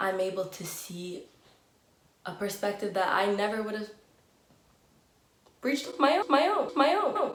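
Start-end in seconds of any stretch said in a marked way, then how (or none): 5.6-7.4 breaking voice, squeaking very high. Speaker talking to listeners, mid-sentence, voice cracking. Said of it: "my voice cracked".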